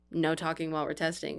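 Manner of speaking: normal talking voice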